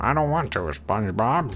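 lousy cartoon character voice. Talking to an object he calls Squidward, the speaker answers for it: bad Squidward impression. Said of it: "That was a horrible impression".

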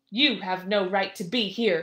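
loud, rough, gruff, heavy-handed giant voice. Narrating a story, the giant finds two travelers asleep on his land: Despair's loud, gruff voice. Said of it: "the giant said in a loud, gruff voice".

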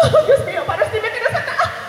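high, giggling, laughing squeal of disbelief.

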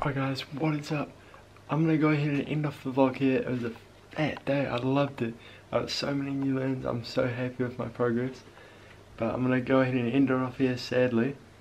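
hushed voice. Ending the video while everybody in the house is asleep: speaking quietly. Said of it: "I have to stay really quiet".

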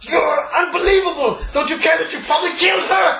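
very high, shrill acted scream. Voicing a man who accuses the players of killing her: screaming in character. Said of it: "is what he screams at you".

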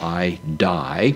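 normal talking voice

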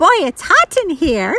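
high, squeaky, squeaking little mouse voice. A mouse inside the plane's engine speaks up, squeaky mouse voice. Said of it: "squeaked a mouse".

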